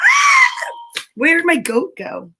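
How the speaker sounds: very high, screaming, shrieking shout.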